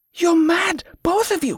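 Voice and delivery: very high-pitched hissed words. Yvette, to Sidois and the pirate as they move the litter, hissing. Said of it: "she hissed".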